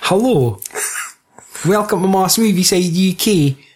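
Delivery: put-on American accent. Imitating the american hosts of another podcast: imitating an american accent. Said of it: "our American compadres that sound like".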